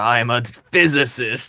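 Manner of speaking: put-on old English accent, slow and measured. Speaker quoting a physicist working on a video game: imitating an old English accent. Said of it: "he had like the old English accent too".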